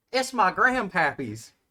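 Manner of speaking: put-on high, eager, excited child voice, showing off. Voicing a kid asked what weapon he uses, excited kid voice. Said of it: "very excitedly pulls like a rusty longsword".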